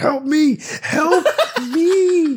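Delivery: mock long scream, very high, very slow. Retelling how a kid in the school bathroom cried out: imitating a kid screaming. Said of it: "he's screaming".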